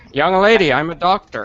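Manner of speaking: muffled, high-pitched alien creature voice. Hosts talking about doing cartoon character voices, one tries the Zoidberg voice. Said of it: "when you do the Zoidberg voice".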